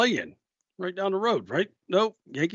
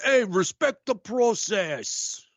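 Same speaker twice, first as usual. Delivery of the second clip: put-on thick Bronx New York accent, drawn out; 5 semitones higher than usual. Acting out the dad on a phone call to his shaving son, heavy New York accent. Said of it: "with the heavy New York accent".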